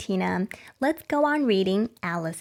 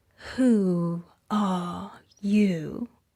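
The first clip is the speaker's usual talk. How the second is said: drowsy, listless, languid sleepy voice; 3 semitones lower than usual. Reading the Caterpillar's first question to Alice, in a languid, sleepy voice. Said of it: "addressed her in a languid, sleepy voice".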